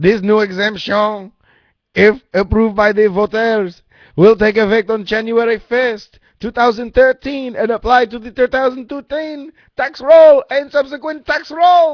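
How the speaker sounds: put-on French accent. Reading a ballot amendment aloud after a viewer suggests an accent: french accent.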